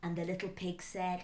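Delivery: ordinary delivery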